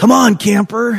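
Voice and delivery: mock very high call yelled from far away. Retelling a camp memory, the speaker imitates a counselor calling to him: retelling a counselor's yell. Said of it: "one of the counselors yells over at me".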